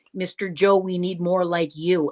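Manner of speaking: ordinary delivery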